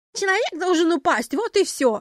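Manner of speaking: mocking, teasing mimicry. Reading a play: the militant lady mimics the tourist's words back, mocking mimicry. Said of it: "передразнивая".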